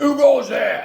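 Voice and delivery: very loud megaphone shout. Reading a story, a nurse calls from a tower: deep voice through a megaphone. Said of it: "came a deep voice through a megaphone".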